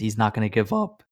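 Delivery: voice cracking and breaking. Describing a movie scene, voice cracking. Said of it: "my voice cracked".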